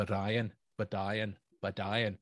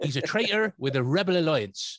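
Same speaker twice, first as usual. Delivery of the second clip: higher, louder put-on West Country accent; 7 semitones higher, 9 dB louder than usual. Imitating Darth Vader's lines as if voiced by David Prowse: David Prowse's West Country voice. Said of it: "if they had have actually used his voice".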